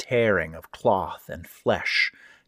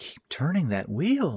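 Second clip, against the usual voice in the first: sweet, high, supplicating pleading voice, swooping; 7 semitones higher, 3 dB quieter than usual. Reading a story aloud, the narrator voices a speaker behind the door: high, sweet, pleading. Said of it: "said the high, sweet voice in a supplicating tone".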